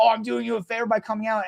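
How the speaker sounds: mock yelling, barked with a rough edge. Retelling what a driver said in a parking argument: imitating someone yelling. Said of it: "yelling at me and telling me".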